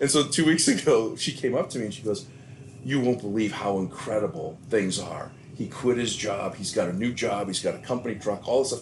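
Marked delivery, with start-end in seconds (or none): none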